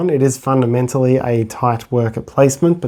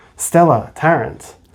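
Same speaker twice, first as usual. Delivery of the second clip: crisp train announcer voice, higher pitch; 3 semitones higher than usual. Retelling a train trip with the wrong ticket, in a crisp train announcement voice. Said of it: "this announcement went".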